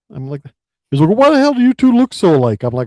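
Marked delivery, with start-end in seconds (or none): 1.1-2.6 very high-pitched, shrill, loud yelling. Retelling what a son said: imitating someone yelling. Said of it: "so he's yelling".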